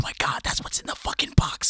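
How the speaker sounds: quiet whispering. Recalling whispering to the camera during a scary scene, retelling a whisper. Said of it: "I was trying to whisper to the camera".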